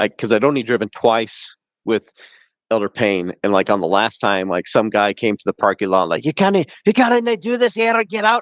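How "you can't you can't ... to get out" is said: very high-pitched, loud shout. Retelling a guy in the parking lot ordering them out: imitating someone yelling. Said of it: "and we got yelled at".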